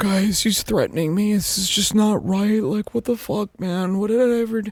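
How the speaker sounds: high, put-on whiny, aggrieved tone. Acting out complaining to viewers about a threat: mock whining. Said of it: "But you don't start whining".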